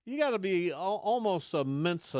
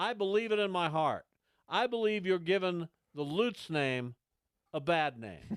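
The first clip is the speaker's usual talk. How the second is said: usual speaking voice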